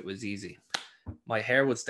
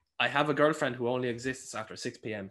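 plain

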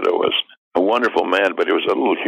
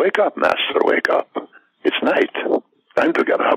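creepy hunchback servant character voice; 10 semitones higher than usual. Recalling playing Igor, waking the master in the coffin; Igor voice. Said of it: "He had a kind of a voice like that".

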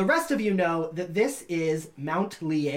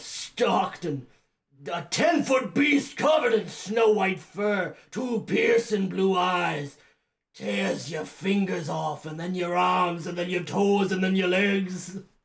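rough, gravelly, gritty-throated character voice. Voicing a character in a tabletop game, gravelly character voice. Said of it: "And he says, / It's not supposed to be quite so gravelly".

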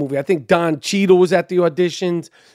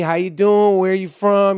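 put-on, laid-back New York drawl. Retelling meeting Penny, who directed Big: Penny's laid-back New York drawl. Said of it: "real New York drawl".

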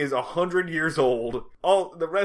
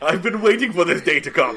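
put-on gleeful vulture-like voice, louder; 4 dB louder than usual. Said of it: "so gleeful to be, like, picking up Barney's corpse".

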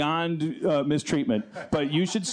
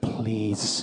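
lower, mock delivery through gritted teeth; 6 semitones lower than usual. Retelling a man's words in an elevator: imitating saying it through gritted teeth. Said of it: "he just gritted his teeth".

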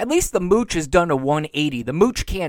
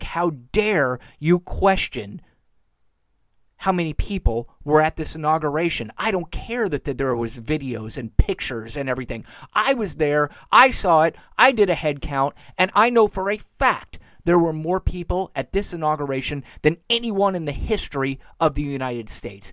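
usual speaking voice

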